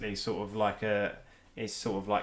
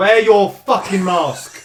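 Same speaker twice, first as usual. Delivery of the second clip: very high, very loud, drawn-out furious yell; 10 semitones higher, 16 dB louder than usual. Interrupting a chat about mask wearing with an outburst: angry outburst shout. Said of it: "I'm so angry".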